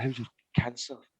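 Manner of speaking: mimicked hushed voice. Acting out how uncomfortable people ask after someone's illness, imitating a hushed voice. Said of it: "they'll say it in like a hushed voice".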